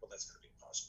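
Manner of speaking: soft, near-whispered, doubtful, under the breath. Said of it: "I'm like".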